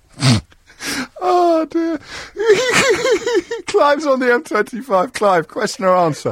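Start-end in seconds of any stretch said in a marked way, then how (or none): 0.2-5.1 high-pitched, giggling, laughing speech. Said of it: "You and me both".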